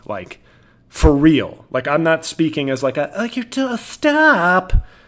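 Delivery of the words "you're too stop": very high exaggerated camp voice, drawn-out stop.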